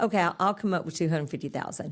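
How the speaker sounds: usual speaking voice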